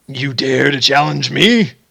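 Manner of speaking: deep divine voice. In a game, the kobold god answers a challenger, in a deep voice. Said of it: "you hear this deep voice say".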